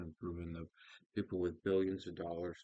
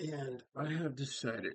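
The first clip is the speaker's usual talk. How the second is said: yawning while speaking, much higher; 8 semitones higher than usual. Speaker starting a morning video, yawning while speaking. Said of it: "sorry, I'm yawning".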